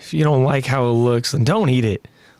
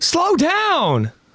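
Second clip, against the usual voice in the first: very high-pitched cry. Voicing a boy warning a girl who eats too fast: yelling a warning. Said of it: "Connie yells and warns out to Sasha".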